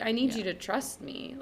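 ordinary talk, nothing marked

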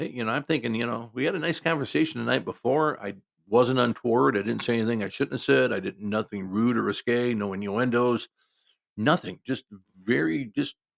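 plain

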